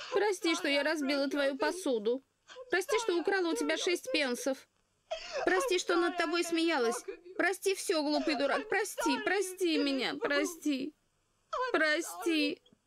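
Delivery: weeping, tearful voice. In a drama, a girl begs a man for forgiveness, crying. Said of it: "А теперь перестань плакать".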